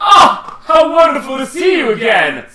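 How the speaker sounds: hearty, cheerful tone. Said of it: "And he says".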